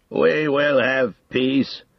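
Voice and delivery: thick, strained, effortful voice. The king answers at last, thickly and with effort. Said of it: "thickly and with an effort".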